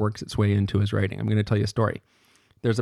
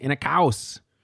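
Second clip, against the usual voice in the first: put-on pitched-up German accent, lecturing delivery; 5 semitones higher than usual. Retelling how a lecturer said "inner chaos": imitating Melanie Klein's German accent. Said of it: "the way that she does".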